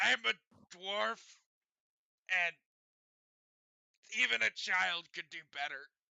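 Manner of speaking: very loud, flat-out blunt dwarf voice. Voicing a dwarf dock worker judging armor: dwarf speaking very bluntly. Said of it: "Kinda very bluntly".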